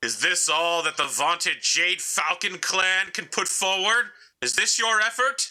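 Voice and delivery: very high-pitched voice, like calling over a radio. Voicing an enemy pilot who opens the comms: enemy pilot speaking over comms. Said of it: "he opens the comms and goes".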